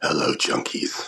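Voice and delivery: very deep, low-pitched voice. Someone newly joining greets the audience in a deep Batman voice. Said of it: "That's pretty deep".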